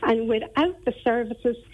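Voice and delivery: ordinary talk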